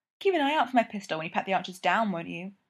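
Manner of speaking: plain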